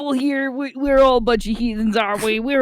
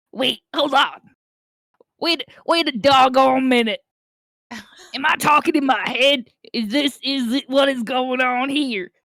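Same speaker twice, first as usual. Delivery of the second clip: creature voice of a bugbear. Doing voices in a scene, the speaker plays the bugbear character voice. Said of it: "the schizophrenic bugbear".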